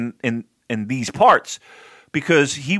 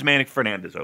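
ordinary talk

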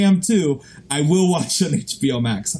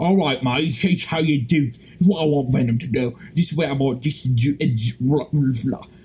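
loose put-on film-star voice, tripping over words; 2 semitones lower than usual. Imitating an actor pitching ideas to a screenwriter over Zoom: Tom Hardy impression. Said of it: "my Tom Hardy impression".

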